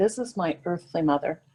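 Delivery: ordinary talk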